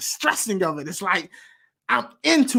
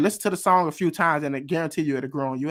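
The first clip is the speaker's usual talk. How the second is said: ordinary talk, nothing marked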